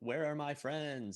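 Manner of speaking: high-pitched, mechanical robot voice. Game narrator voicing what a robot says to the players, in a robotic tone. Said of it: "in a robotic tone".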